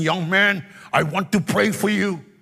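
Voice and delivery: put-on strong German accent. Retelling what a preacher said at a lunch: imitating a strong german accent. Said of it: "in his strong German accent".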